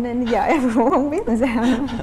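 slow, nervous laugh through the words.

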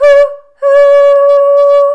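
high, loud hoot imitating a train whistle. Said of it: "here's our own train whistle".

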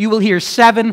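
plain

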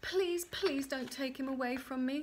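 begging, pleading, imploring tone. The little man has come for her child; she begs him. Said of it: "she begged".

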